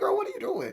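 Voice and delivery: very high, sassy, disbelieving tone.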